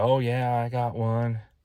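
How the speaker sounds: put-on heavy, thick Texas accent, drawled very slowly. Retelling a phone call with a shop owner, quoting his thick Texas accent. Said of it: "He's got a real thick Texas accent".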